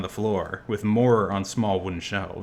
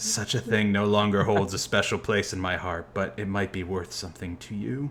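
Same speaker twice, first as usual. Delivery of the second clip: whispered character voice. Narrating to a player what they hear, voicing Elixian: Elixian's whisper.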